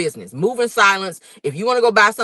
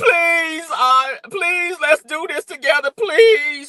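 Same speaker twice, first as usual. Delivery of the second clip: high, drawn-out, pleading, ugly-crying sobs; 8 semitones higher than usual. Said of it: "Y'all know she do the ugly cry".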